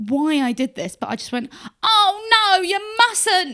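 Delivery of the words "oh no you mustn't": weird put-on Cockney voice, raised, slow, drawn out. Retelling reacting when a man grabbed something from their hand, weird Cockney voice. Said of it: "I did it in a really weirdly Cockney voice".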